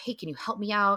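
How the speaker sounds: ordinary delivery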